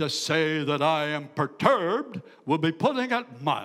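deep, manly preacher-like voice with rising pitch. Retelling what a liberal pastor said on a radio program: imitating a deep masculine voice. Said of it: "He had a very deep masculine voice".

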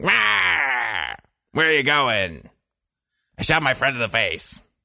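very slow voice, where drawn out. Imagining a game villain voiced by Dick Cheney: Wario voiced as Dick Cheney. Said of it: "voiced by Dick Cheney or something".

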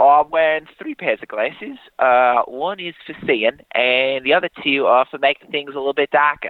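attempted put-on accent drifting into Australian. Asked to repeat the answer in an accent: attempted accent that sounds Australian. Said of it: "This sounds Australian".

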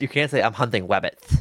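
cartoon voice pronouncing r sounds as w. Urging another speaker to try it, demonstrating an Elmer Fudd voice. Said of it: "go into like your Elmer Fudd voice".

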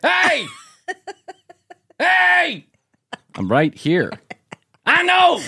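very high, slow, drawn-out hollering. Mocking people on the show who always yell: imitating someone yelling. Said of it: "Why they always have to yell?".

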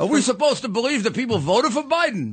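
put-on New York accent. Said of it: "in that exact, uh, accent".

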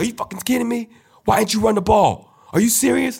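play-acted very high, furious, angry yelling. Speaker retelling a halftime locker room blowup, imitating James Harrison yelling. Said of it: "he's yelling like".

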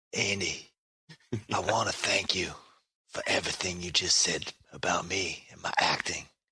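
low, hushed stage whisper. Play the guest thanking Andy for his kind words about your acting, in a half-whispering Tyreese impression. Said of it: "even though I whisper all my lines".

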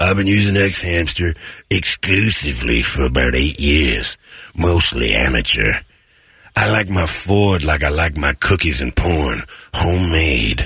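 low, seedy, sleazy reading voice. Reading aloud an email someone sent in: seedy reading voice. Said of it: "I have to read it like this 'cause this is how seedy it showed up".

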